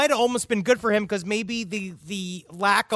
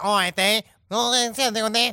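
fast, fake Australian accent, big bloke voice. Trying to do a very, very large australian in a comedy bit, put-on australian accent. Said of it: "I'm trying to do a Australian".

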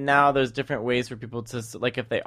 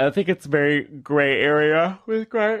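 talking through a yawn, much slower; 4 semitones higher than usual. In a group conversation, the speaker keeps talking while yawning. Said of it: "Sorry, I'm yawning".

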